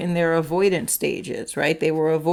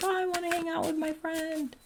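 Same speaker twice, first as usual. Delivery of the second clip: put-on high, soft tearful kid whimper. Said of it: "they're crying".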